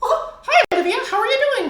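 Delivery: squeaked out, high and loud. Asked to do the Mickey voice, speaker greets someone by name in a Mickey Mouse voice. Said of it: "do the Mickey voice".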